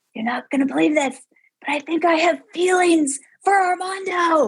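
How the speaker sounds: put-on whisper. Retelling telling a best friend in a loud bar: imitating own whisper. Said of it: "I'm, like, whispering".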